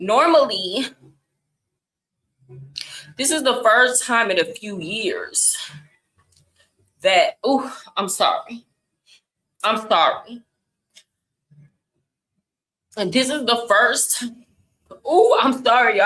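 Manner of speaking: fighting back emotion. Reacting to devastating news, fighting back emotion. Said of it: "I didn't know I was gonna get this emotional".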